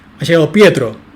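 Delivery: name hit with emphatic stress and intonation. Explaining emphatic intonation with an example: emphatic stress on 'Pietro'. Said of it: "con una entonación enfática".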